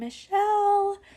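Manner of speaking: high, slow, drawn-out calling voice.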